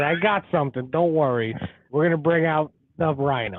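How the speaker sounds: ordinary talk, nothing marked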